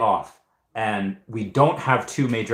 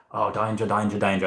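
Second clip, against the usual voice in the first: deep imitated Australian accent. Showing how Reese's deep Australian voice sounds: Steve Irwin impression. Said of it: "I guess Steve Irwin".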